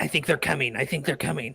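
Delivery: far-off, faint, rushed goblin voice, barely heard. Narrating for the players, goblins barely heard in the distance, distant goblin voices. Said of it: "some goblin voices".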